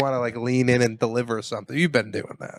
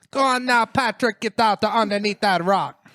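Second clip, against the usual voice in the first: attempted Jamaican accent, much higher pitch; 9 semitones higher than usual. Trying out cartoon character voices, attempted jamaican accent. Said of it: "That was not Jamaican".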